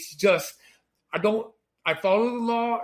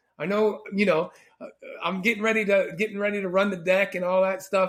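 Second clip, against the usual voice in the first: usual speaking voice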